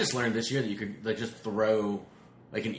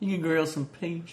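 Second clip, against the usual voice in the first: put-on South Carolina accent, pitched up; 7 semitones higher than usual. Joking about grilled peaches as a friend would: imitating Rachel's accent. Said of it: "She does have a good accent".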